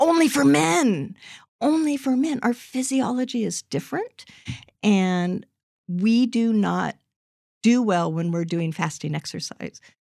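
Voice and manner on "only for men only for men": high, raised, emphatic mock shouting, repeated. Retelling yelling back at the radio while listening, retelling yelling at the radio. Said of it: "i'm yelling at the radio going".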